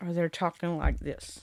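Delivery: ordinary talk, nothing marked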